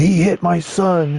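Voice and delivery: mock very slow, high, drawn-out, stretched shout. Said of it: "and then yelled".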